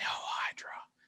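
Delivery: soft, unvoiced whisper.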